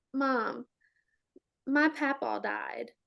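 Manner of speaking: put-on sobbing, crying child voice. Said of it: "he just starts busting out in tears".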